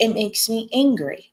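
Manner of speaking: normal talking voice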